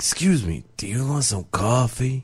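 pushy, hustling carnival-barker style voice. Joking about pushing coffee on people, playing a pushy pusher. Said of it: "I'm a pusher".

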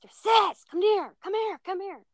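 very high, loud, high-pitched yell. Speaker retells her youngest brother calling her from downstairs, imitating Dakota yelling. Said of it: "he yells up the stairs".

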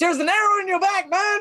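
very high-pitched, shouted yell. During a game, a player's character yells a warning to another character, yelling. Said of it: "I'm going to yell at Isaac".

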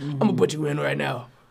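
put-on rough, raspy, creaky old coach voice. Retelling what an old coach said: imitating coach's raspy voice. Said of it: "he has one of those raspy voices".

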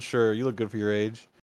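ironic, teasing, sarcastic fake tone. Retelling a character's reply in a film: imitating a sarcastic remark. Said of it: "he's just being sarcastic".

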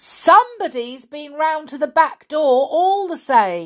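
loud, high shout. Peter calls out to the old caretaker, shouting. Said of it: "shouted Peter".

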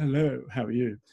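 posh, refined English accent. Showing your range of accents to an audience, you greet a police officer with a posh english accent. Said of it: "but I can also do posh".

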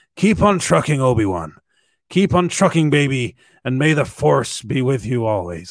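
heavy, exaggerated, pushed-too-far Irish accent. Imagining Qui-Gon's Force ghost speaking to Obi-Wan, Liam Neeson voice, a bit too Irish. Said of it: "I went a bit too Irish there".

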